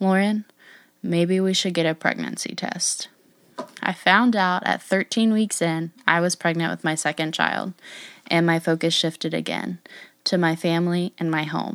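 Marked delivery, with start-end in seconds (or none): 0.0-3.1 flat, level, toneless monotone delivery. Retelling what a man said after her mom's re-diagnosis, imitating a very slow monotone. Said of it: "stating very slowly and monotone".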